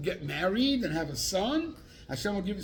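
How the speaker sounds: ordinary delivery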